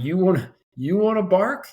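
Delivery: sharp barking tone. Retelling telling off a child at home: retelling own barked order. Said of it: "I've definitely barked".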